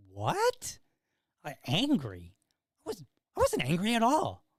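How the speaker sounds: bewildered, stunned, incredulous, drawn-out, pitched high. Retelling the reply to hearing he sounded angry: retelling own stunned reaction. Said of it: "I was stunned".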